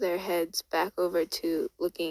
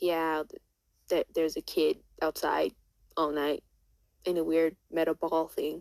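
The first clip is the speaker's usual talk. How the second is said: usual speaking voice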